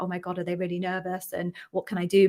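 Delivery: ordinary talk, nothing marked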